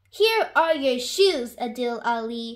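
ordinary talk

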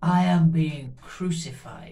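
put-on strange voice. Speaker retells what a man suddenly said, imitating his strange-sounding voice. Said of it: "in this strange sounding voice coming out of him".

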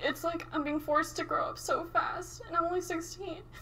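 heartfelt, high emotional lament. A 16-year-old talking about the stress of taking Ubers everywhere, getting emotional. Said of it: "I'm sorry, I'm getting emotional".

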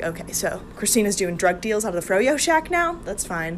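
ordinary talk, nothing marked

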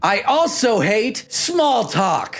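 full-on, high, loud yelling. Replying to a match's greeting on a dating app: yelling. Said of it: "why are you yelling?".

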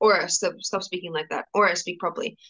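ordinary talk, nothing marked

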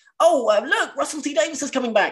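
high, fast, excited blurting voice.

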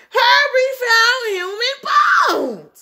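very high, slow, drawn-out shrieking scream. A classmate races out of the bathroom to tell the class, screaming and shrieking. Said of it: "screaming and shrieking".

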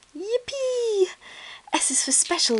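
very high, drawn-out shout. A story character, paw just stamped and thrown into the air: yelled. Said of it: "yelled Ruby".

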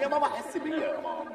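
high, loud pleading whine.

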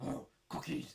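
put-on puppet monster character voice. Doing a few voice impressions after talking about Sesame Street, in a Cookie Monster voice. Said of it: "And then we have Cookie Monster".

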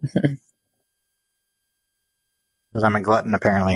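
speaking with mouth full of food while chewing. Tasting food with others, talking with mouth full. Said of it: "I have my mouth full".

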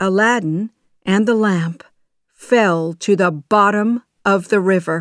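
ordinary delivery

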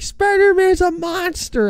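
put-on very high, freaked-out, panicked child's wailing cry. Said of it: "Freaking out".

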